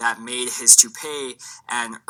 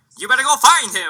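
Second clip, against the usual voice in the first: put-on loud, very high 1920s old-timey voice; 12 semitones higher, 5 dB louder than usual. Quoting a man from something they watched: 1920s old-timey voice. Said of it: "he was like so 1920s old-timey".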